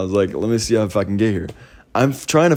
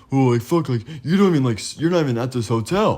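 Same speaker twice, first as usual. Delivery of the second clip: mock contemptuous, snippy, dismissive, full of attitude; 3 semitones higher than usual. Retelling a security guard's reply during an argument: imitating a guard's attitude. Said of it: "Gives me super attitude".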